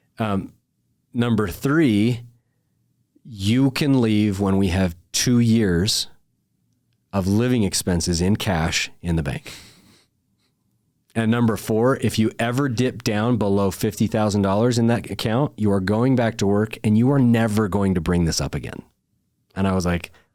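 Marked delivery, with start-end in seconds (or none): none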